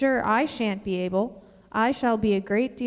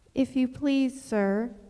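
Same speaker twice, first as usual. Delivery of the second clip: low-voiced and timid; 2 semitones higher than usual. Alice, desperate, addresses the rabbit as it comes near: low, timid voice. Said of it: "in a low, timid voice".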